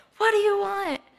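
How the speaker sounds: play-acted shrill, very high yell. Retelling a woman who answered the door to them, retelling a yell. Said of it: "starts yelling at us".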